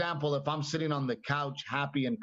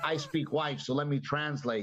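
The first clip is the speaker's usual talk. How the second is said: ordinary talk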